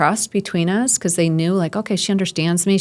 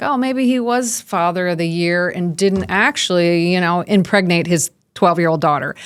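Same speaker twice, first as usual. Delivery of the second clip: usual speaking voice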